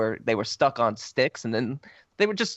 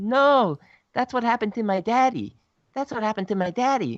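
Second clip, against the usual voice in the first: put-on very high, babyish toddler voice; 9 semitones higher, 3 dB louder than usual. Recounting a film scene, quoting the kid's line like a two-year-old. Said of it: "acting like a like a two year old".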